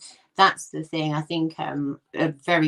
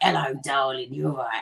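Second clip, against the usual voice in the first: really raspy North London voice. Imitating a woman the speaker describes, in a raspy North London voice. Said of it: "she's got that really raspy voice".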